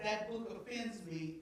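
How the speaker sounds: ordinary talk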